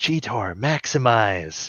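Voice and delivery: hushed, sneaky half-whisper under the breath. Retelling what a cartoon character says before he transforms, half-whispered. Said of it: "And he whispers".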